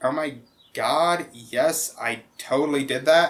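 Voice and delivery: put-on gushing Valley Girl way of talking. Retelling how one of the girls at work talked: imitating a Valley Girl way of talking. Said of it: "talked very Valley Girl-ish".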